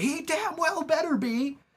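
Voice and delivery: shrill, very high, slow, drawn-out yelling. Retelling how a mom answered the phone: imitating a mom yelling. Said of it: "She's just yelling".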